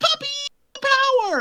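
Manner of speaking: very high-pitched, squeaky voice. Complaining about a cartoon character's lines: annoying Scrappy-Doo voice. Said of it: "in that fucking annoying voice".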